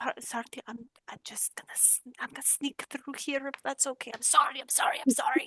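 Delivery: apologetic, sorry-sounding tone. A player speaks in character, squeezing past others to reach Kira: apologetic, sneaking past. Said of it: "and just be like".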